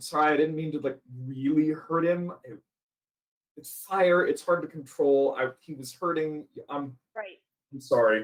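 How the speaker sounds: very low, shamefaced, sheepish voice. A character walks up to the group and apologizes, sheepish apology. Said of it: "like looking a little sheepish".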